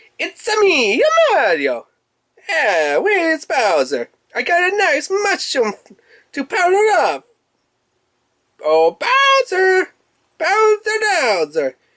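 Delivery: squeaky, very high cartoon voice, pitch swinging wildly. Unboxing a stylus set and voicing the Mario stylus: Mario voice. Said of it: "I could do Mario's voice a little bit better".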